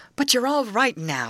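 soothing, gentle. A girl speaks to a boy she has just found again, comfortingly. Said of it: "said Grace comfortingly".

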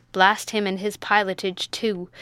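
ordinary delivery

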